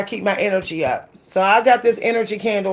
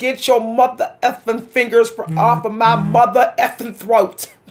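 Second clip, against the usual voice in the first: put-on threatening heroine voice; 2 semitones higher than usual. Retelling a favourite movie scene with a gun, imitating Pam Grier as Jackie Brown. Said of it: "She'd be like".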